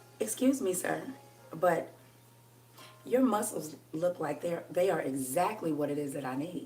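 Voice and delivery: very soft, low, quiet, flirty voice. Showing how she would ask a muscular man for help, in a lowered voice. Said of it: "And I'll lower my voice just like that".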